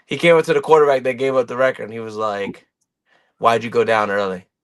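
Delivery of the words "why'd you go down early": mock low, flat-out serious, angry tone. Retelling what a player angrily asked a quarterback: imitating someone dead serious and mad. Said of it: "dead serious".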